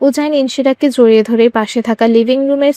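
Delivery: plain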